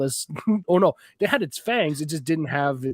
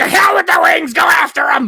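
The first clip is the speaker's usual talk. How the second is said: very high, very loud, frantic losing-it yelling; 11 dB louder than usual. Retelling a wrestling commentator losing it: imitating Roddy Piper yelling. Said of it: "Roddy Piper just starts losing it".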